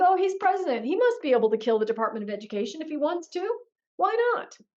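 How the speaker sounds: mock naive voice, high, rushed, innocent-sounding.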